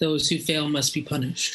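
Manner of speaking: very calm, blank, level delivery. Voicing a character answering what happens after a failed mission: very calm, blank delivery. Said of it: "Her very blank, very calm face turns to you and says".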